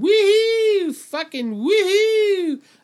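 put-on, very high-pitched, wild cheering whoop. Mocking the studio crowd on a show: imitating a cheering crowd. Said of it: "They're losing their minds".

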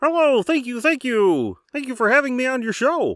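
very high, squeaky frog puppet voice. Doing a voice picked by a wheel app for a Jeopardy bit, Kermit the Frog voice. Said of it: "Kermit in Jeopardy?".

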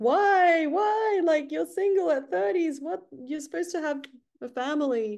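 acted very high tearful crying wail, drawn-out "why". Speaker retelling her mom's reaction to her breakup, imitating mom crying. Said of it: "My mom was like crying".

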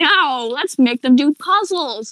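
slow, deliberate, drawn-out cartoon villain voice, musing. Describing a villain and henchman trope, imitating Skeletor. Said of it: "And Skeletor is like".

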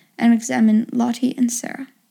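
plain

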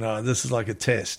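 ordinary talk

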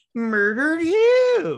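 high, slow, loud mock cry.

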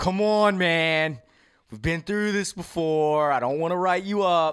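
relaxed, laid-back teacher voice. Describing a laid-back teacher talking to a late student, imitating a cool teacher. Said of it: "The cool teacher".

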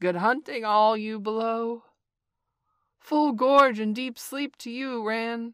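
calling out. Narrator reading a character thanking a kite: crying out. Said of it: "cried Bagheera".

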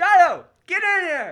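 loud, high-pitched yelling. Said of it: "I have to yell".

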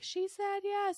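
mock thrilled, very high excited shriek. Recounting how he reacted after the speaker answered him, retelling a scream. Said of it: "And he screamed like".

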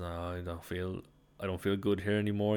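ordinary delivery

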